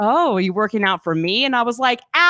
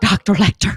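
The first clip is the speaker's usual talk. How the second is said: very frantic, put-on West Virginian accent; 3 semitones lower than usual. Quoting one of Clarice's last lines, put-on frantic Clarice voice. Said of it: "Just very frantic, very West Virginian for some reason".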